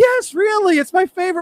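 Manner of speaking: very high, loud, excited insistence.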